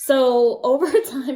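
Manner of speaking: laughing while talking. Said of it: "sorry, I'm laughing at my daughter".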